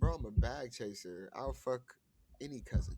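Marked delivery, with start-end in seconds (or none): none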